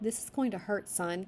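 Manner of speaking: ordinary delivery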